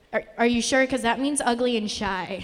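ordinary talk

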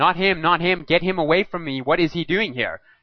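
acted-out, high-pitched shrieking outburst. Retelling what a restrained girl shrieked at the man who walked in, mock-shrieking. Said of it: "she started shrieking at him".

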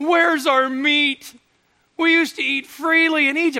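whiny, complaining voice. Explaining a passage to an audience, the speaker acts out the grumbling of people who complain, deliberately in a whiny voice. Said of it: "if my voice is a little whiny as I do this".

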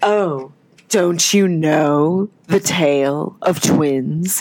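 serious, grave, low-pitched, very slow and drawn out. Retelling an actress's line from the show: imitating Teal Wicks's serious voice. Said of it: "the seriousness in her voice".

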